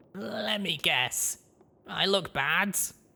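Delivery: feeble, weak, very high, hurt-sounding voice. Badly hurt, the narrator answers a little bug robot above him, weak voice. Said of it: "I replied weakly".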